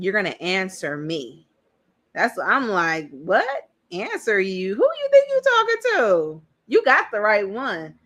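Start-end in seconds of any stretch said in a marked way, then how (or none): 0.0-1.5 mock-demanding man's voice, mock-insistent. Speaker quotes a man who tries to win conversations, in a mock-demanding tone. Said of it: "Then he's being very demanding".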